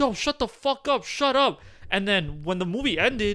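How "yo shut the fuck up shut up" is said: loud, pitched-up yell. Retelling how the audience yelled at loud kids: imitating people yelling. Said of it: "everyone was yelling at them".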